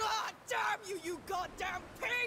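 shouting in pain.

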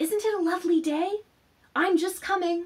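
loud theatrical whisper. A girl calls out of the window to a boy, in a loud whisper. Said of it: "called out of the window in a loud whisper".

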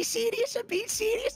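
squeaky, very high-pitched Scouse accent. Imitating a friend's way of talking: Barry's Scouse accent. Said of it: "Can I do Barry's real Scouse accent?".

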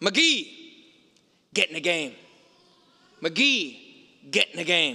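put-on throaty, guttural Brooklyn accent. Telling a football story, the speaker quotes the coach sending a player in: Vince Lombardi's guttural Brooklyn voice. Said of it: "in that kind of guttural Brooklyn voice".

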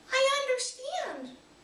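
tiny, squeaky, very high voice. Reading a story, the first-person narrator replies to Otto, squeaked softly. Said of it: "I squeaked softly".

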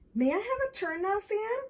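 eager, hopeful, high voice. Michael asks Sam, who is playing firefighter, for a turn: hopeful. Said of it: "Michael asked, hopefully".

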